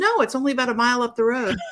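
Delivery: smart-aleck, sarcastic delivery. Retelling her husband's answer to a lady who stopped them: retelling a sarcastic reply. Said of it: "my lovely sarcastic husband goes".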